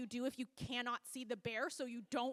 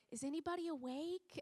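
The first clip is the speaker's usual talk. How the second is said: very quiet, soft, hushed voice; 4 semitones higher, 5 dB quieter than usual. Retelling checking whether anybody is awake at night: imitating saying quietly. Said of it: "so I kind of very quietly say".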